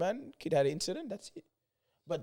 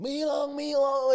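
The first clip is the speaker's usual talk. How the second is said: put-on scream, higher pitched; 9 semitones higher than usual. Retelling the same man waking everyone again: imitating someone screaming.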